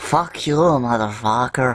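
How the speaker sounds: put-on French accent, strong and heavy. Voicing a grappled character cursing at his foe: French accent. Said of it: "He sounds very French when he says".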